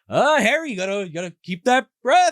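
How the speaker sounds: high, loud gloating villain taunt. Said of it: "and he's like".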